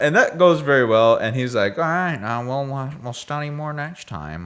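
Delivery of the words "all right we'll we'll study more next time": put-on character voice, higher pitch. Retelling a scene, quoting Dave in a Hiccup impression. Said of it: "It's my best Hiccup impression".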